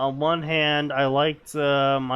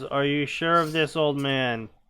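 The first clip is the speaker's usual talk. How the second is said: ordinary delivery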